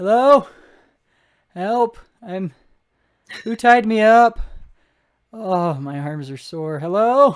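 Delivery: very loud, high-pitched hollering. Narrating a game scene, the speaker voices Dante, tied to a building, calling out for help. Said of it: "is now like calling out".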